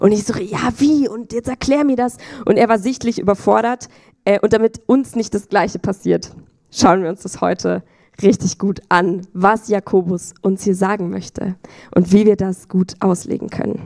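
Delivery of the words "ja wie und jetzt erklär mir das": mock insistent, pushy teenage voice. Retelling stomping over to a leader with a Bible: imitating her insistent teenage self. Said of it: "genau so ein Teenie war ich".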